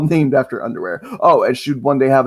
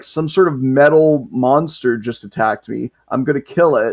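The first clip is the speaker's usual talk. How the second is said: usual speaking voice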